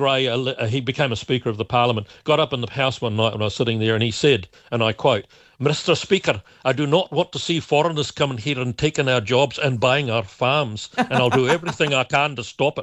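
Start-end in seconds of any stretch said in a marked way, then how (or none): 5.6-12.8 put-on Scottish accent, natural speech-like delivery. Quoting Gray addressing the Speaker in the House, Gray's Scottish accent. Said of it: "Was that your Scottish accent".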